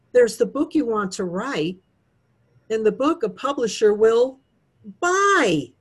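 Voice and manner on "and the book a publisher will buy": slow delivery with deliberate pause before buy. Speaker quoting a line they often say in talks, pause before buy. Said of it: "listen for the pause".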